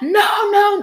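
put-on shriek, very high-pitched screaming. Speaker quotes a woman's reply about needing money, retelling her screaming. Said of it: "She was like screaming".

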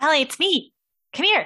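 calling out from afar. Playing a character calling down into a tower from the roof: calling out from a distance. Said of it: "You can hear her calling you from the roof".

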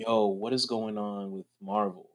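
half-whispered under the breath, hushed aside. Retelling what young guys said after every joke: imitating a half-whisper. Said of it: "a whispered conversation".

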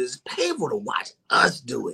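emotional voice with swooping pitch. Speaker discussing reactions in the comments, getting emotional. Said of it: "I'm sorry I'm getting emotional right here".

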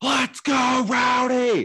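mock very high, full-throated fan-style scream. Retelling a woman at a game cheering during Rowdy's at-bats, imitating her screaming. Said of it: "She just screams".

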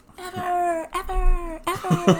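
fake echo, very high and repeated. Adding emphasis to a point in a conversation: mimicking an echo. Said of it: "You in a cave?".

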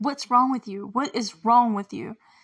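mock furious, angry shouting. Recapping a scene where one character yells at a girl: retelling an angry yell. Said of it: "Mike gets mad and yells at her".

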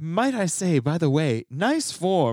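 put-on accent of a little British woman. Speaker retells what the British voice lady in the clip said, in a British lady voice. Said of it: "the British voice lady said".

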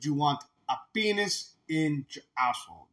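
thick, heavy, soft put-on French accent. Retelling a movie scene where a Mountie pretends to be French-Canadian, heavy French accent. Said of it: "with like a heavy French accent".

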